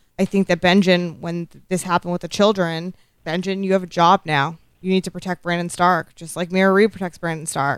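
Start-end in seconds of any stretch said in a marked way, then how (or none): none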